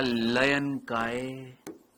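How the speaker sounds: very slow, drawn-out speech.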